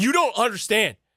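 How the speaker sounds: shrill, very high, loud screaming. Recounting calling a friend on the phone with news, retelling own screaming. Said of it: "I'm screaming at him".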